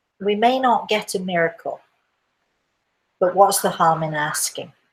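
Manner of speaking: ordinary talk, nothing marked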